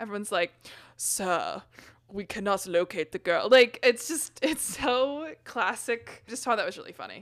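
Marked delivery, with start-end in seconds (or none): 1.0-3.5 put-on sinister British villain accent. Discussing Star Wars, imitating the First Order officers: stereotypical sinister British accent. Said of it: "a very stereotypical British sinister accent".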